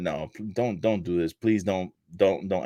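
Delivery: put-on crying voice. Acting out an imagined wrestler begging an unmasking opponent: imitating MJF crying and pleading. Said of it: "crying and just looking at him like".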